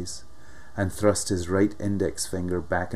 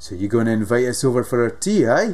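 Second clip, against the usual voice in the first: loud, high, jeering and taunting; 5 semitones higher, 8 dB louder than usual. Monkey speaks to a woman in front of his crony: jeering. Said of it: "He was jeering now".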